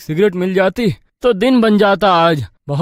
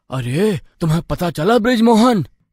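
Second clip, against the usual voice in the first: ordinary delivery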